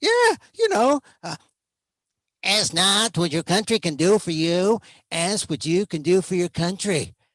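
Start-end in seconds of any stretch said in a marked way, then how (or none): 2.4-7.1 mean put-on voice, done proudly, laid on thick. Recalling 1962 and quoting the famous inaugural line, JFK Kennedy accent.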